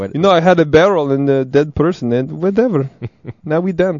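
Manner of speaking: put-on Hungarian accent. Answering the other speaker who asks how Hungarian sounds, in a mock Hungarian accent. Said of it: "That's my Hungarian accent".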